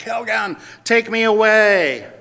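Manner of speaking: very loud, high, frazzled wail, away stretched. Retelling a commercial where a woman knocks a plant over, retelling a scream.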